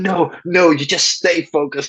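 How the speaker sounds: acted, angry, frantic, very high-pitched yelling. Speaker retells what a man shouted at them, imitating a frantic shout. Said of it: "he's just going crazy".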